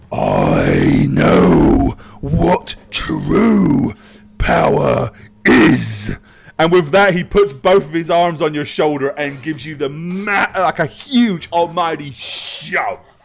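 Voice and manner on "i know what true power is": very slow, drawn-out, deep, rough orc rumble. Voicing an orc who steps right up close: orc character voice. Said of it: "he goes".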